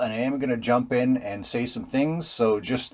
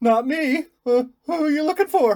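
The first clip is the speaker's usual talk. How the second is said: very high, frightened, nervous, terrified voice; 4 dB louder than usual. Repeating what a man said when his call was returned, imitating someone terrified. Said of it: "He's terrified".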